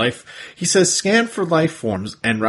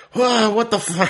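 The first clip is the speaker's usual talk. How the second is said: put-on freaked-out voice, much higher pitched; 11 semitones higher than usual. Recapping a scene where a vine shoots from the ground, mock freaked-out Silverbolt. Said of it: "which freaks out Silverbolt".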